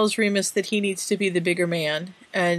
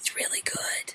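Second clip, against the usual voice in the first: speaking in a quieter whisper. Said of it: "Why are we whispering?".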